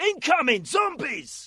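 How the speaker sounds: very loud, very high shouted callout. Speaker demos a line recorded for a game: zombie game shout-out. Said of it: "these were actually zombie shout outs".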